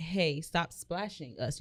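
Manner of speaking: slow, firm, stern, acted-out delivery. Retelling a man in a TikTok telling swimming kids to stop: imitating a stern voice. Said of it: "with a stern voice".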